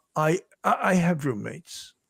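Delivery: mock sorry-sounding, halting words with repeats. Retelling how a witness answered an officer, imitating an apologetic tone. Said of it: "almost saying it in an apologetic way".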